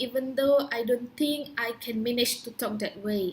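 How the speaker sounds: ordinary talk, nothing marked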